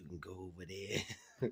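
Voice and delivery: furtive, hushed whisper, very soft, barely there. Quoting a woman who pointed toward a room for counting money, whispering. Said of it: "She was whispering like".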